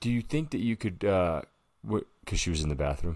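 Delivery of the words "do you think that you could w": easygoing, casual, calm, laid-back, slightly raised voice. Retelling how the boyfriend asked her to throw up: imitating someone chill and calm. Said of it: "he's all being all chill and calm".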